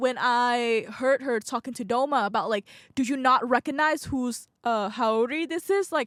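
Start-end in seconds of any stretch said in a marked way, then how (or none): none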